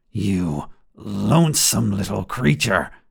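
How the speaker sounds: rough, creaky goblin hiss through a fixed grin. Narrating a tale, a goblin pushes its face close to hers: hissing goblin voice. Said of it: "It hisses through its fixed grin".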